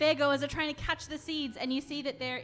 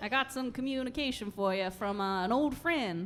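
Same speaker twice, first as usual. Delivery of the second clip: put-on American southern accent; 3 semitones lower than usual. A player speaks in character during a game session, in a put-on southern accent. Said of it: "he learned a southern accent last session".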